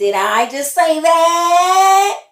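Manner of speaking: booming, slowly belted, drawn-out put-on voice. Catching a phrase just said, asking in a Steve Urkel voice. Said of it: "in my Steve Urkel voice".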